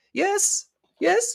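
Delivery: very high, loud call from a distance. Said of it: "you hear a voice going".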